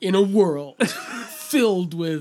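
loud, epic movie-trailer announcer voice. Reacting to a narrator's questions, a speaker mimics a movie trailer announcer voice. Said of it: "Sounds like a fucking movie trailer".

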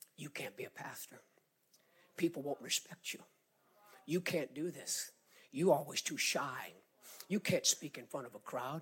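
put-on taunting whisper. A speaker recalls the devil coming to whisper to him, imitating the devil's taunting whisper. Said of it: "the devil would come and whisper".

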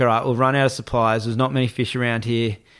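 normal talking voice

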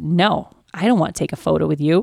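play-acted, cheeky, sassy and blunt. Retelling how a daughter refused a photo: imitating a sassy reply. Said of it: "said it in a way that came off, like, really sassy".

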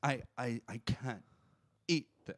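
slow, teary, on-the-verge whimper. Retelling what she said about the steak, imitating someone almost crying. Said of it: "she almost started whimpering, like, almost crying".

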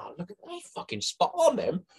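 thrilled, very high-pitched, all-excited gush. Retelling opening the bag and pulling the shirts out, acting out being all excited. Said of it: "all excited".

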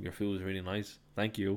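ordinary talk

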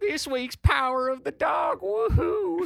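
sloshed cowboy whoop, pitched very high. Podcast host opening a cowboy episode, in a drunk cowboy voice. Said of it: "I sound like the drunkest cowboy ever".

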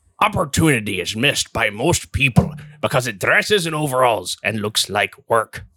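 put-on pirate voice. Reading a quote for players to guess industrialist or pirate; pirate voice. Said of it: "but you heard the voice. It's pirate".

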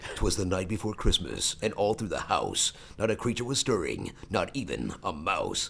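swooping, dramatic film trailer narrator voice. Recounting a voice session, the speaker does his movie trailer voice. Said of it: "which is the movie trailer voice".

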